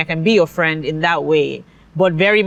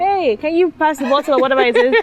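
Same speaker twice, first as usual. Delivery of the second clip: very high-pitched put-on yelling; 9 semitones higher than usual. A parent recalls calling to someone elsewhere in the house; retelling own yelling. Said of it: "I'd find myself just yelling in that way".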